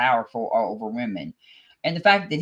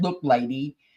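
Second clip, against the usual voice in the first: plain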